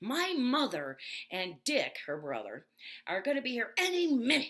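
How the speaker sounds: pissed-off, furious scolding voice, high and loud. Retelling what their mom said when she was furious: imitating an angry mother. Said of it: "She was so pissed".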